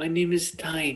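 soft, raspy voice like a mob don. Telling a story, voicing Tiny the rat, mafia leader, Godfather impression. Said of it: "Was that a good Godfather impression?".

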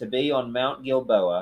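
ordinary delivery

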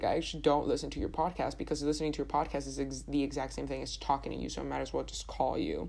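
ordinary delivery

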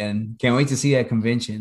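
ordinary talk, nothing marked

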